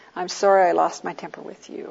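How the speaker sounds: ordinary talk, nothing marked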